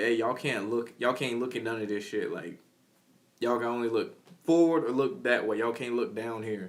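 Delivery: plain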